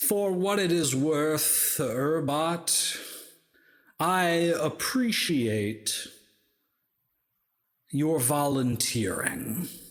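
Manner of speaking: strangely warm, amused, gently chuckling. Voicing a villain who thanks the Urbot for volunteering: gently chuckling, strangely warm-hearted. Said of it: "gently chuckles, like, in a strangely warm-hearted way".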